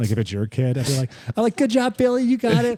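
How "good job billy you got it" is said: mock very high, loud, extra-nice encouraging voice. A former youth baseball coach retelling how he cheered on other kids, imitating his nice coach voice. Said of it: "Like my voice, I'm like, why am I talking like that?".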